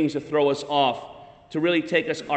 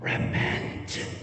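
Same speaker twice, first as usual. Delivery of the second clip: firm tone, much quieter. Retelling how a man on a plane turned to a woman's face, retelling a firm command. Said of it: "He just says really firmly".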